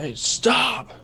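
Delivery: very high-pitched shout. Calling out in character to get their attention: yelling. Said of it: "I yell".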